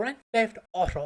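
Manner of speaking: distinctly British pronunciation. Recalling how the character Kat says a line: imitating Kat's delivery. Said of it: "it's just the way she says it".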